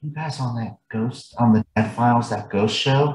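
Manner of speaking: confiding, hushed stage half-whisper. Retelling how a cashier leaned in and asked: imitating a half-whisper. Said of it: "and she whispers".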